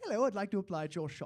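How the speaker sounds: put-on British accent out of nowhere. Retelling applying for a first job at a counter: British accent. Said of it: "I just randomly applied in a British accent".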